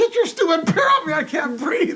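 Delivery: play-acted, high, loud, frantic, desperate yelling. Retelling being smashed by a bear, retelling his own yell. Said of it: "I'm yelling".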